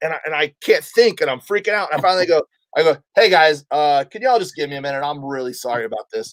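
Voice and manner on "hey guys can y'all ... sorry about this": normal talking voice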